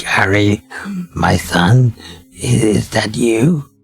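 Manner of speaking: scratchy, raspy voice. Voicing an old blind man who mistakes someone for his son: scratchy voice. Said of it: "He starts talking with a scratchy voice".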